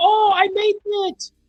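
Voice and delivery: mock whining in a put-on girl voice. Repeating her reaction again: imitating a japanese girl whining. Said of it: "Japanese girl whining".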